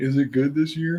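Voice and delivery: facetious teasing tone. Asking the others about a seasonal beer: facetious joking question. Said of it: "I'm being facetious and being like".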